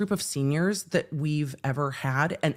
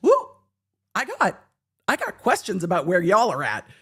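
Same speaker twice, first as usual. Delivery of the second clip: fast, rattled-off, sing-song forecaster patter swooping up and down; 4 semitones higher, 4 dB louder than usual. Retelling what Ryan Hall said about where the speaker lives: imitating Ryan Hall. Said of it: "Ryan Hall, y'all, is like".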